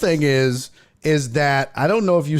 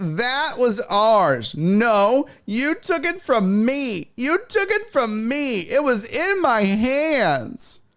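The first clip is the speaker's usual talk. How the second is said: higher-pitched mock whiny baby voice; 9 semitones higher than usual. Retelling what a woman said over a home run ball: imitating a whiny baby. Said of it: "listen to what a whiny baby she sounds like".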